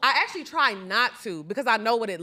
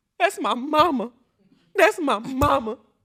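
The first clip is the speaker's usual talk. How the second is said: trembling, shaking voice, angry and near tears; 3 semitones higher, 3 dB louder than usual. Imitating how Candy cried when mad: imitating Candy's shaking voice. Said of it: "like how Candy used to be".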